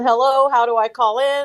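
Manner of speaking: normal talking voice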